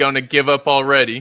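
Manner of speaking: snide, sneering, cutting tone. A game master voices an unhappy character taunting the party, a snide remark. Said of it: "going to give us kind of a snide remark".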